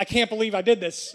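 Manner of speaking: ordinary talk, nothing marked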